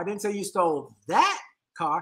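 stress on "that". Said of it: "each time I put the inflection on a different word".

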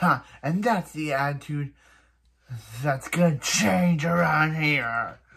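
turned nasty and cold, mean tone. Retelling a cartoon scene where a woman turns mean: imitating a mean tone. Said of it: "And then she turns all mean".

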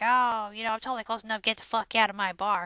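acted elderly woman voice. Retelling what an old lady in the bar says: imitating an old lady. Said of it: "some old lady there, and she's all like".

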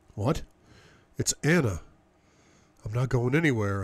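bemused, puzzled muttering. Just woken, the narrator answers the woman huddled beside them: muttered, bemused. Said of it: "I mutter. Bemused".

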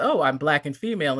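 normal talking voice

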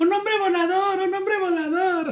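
put-on high, childlike shouting voice.

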